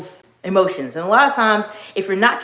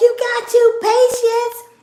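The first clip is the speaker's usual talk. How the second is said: very loud, very high, brusque call with attitude. Retelling how a woman spoke before she changed her tone, imitating her very loud voice. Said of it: "That very loud".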